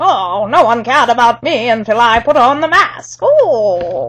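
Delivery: masked villain voice with the opening "oh" drawn out. Imitating how a movie villain sounded: Bane voice. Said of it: "sounded like Jimmy Stewart trying to do a Sean Connery impression".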